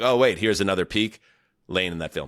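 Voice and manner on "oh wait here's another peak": ordinary talk, nothing marked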